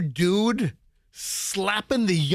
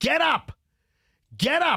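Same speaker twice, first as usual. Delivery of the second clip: put-on male yell, higher pitch; 7 semitones higher than usual. Retelling how a man in the crowd yelled at someone: imitating a man yelling. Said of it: "yelling at the".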